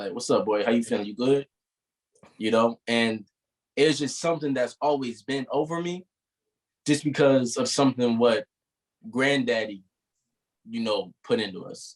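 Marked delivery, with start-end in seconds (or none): 0.1-1.5 quick, put-on easygoing casual delivery. Retelling covering up crying when a cousin walks in: put-on casual greeting. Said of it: "I changed that fast".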